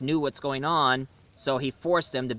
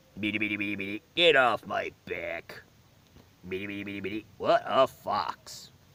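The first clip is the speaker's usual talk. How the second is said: low put-on cartoon robot voice; 5 semitones lower than usual. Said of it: "I can do an impression of him".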